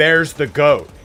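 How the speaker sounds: acted-out scream. Retelling the moment the goat comes up and he points it out, retelling screaming. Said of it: "I just start screaming and pointing".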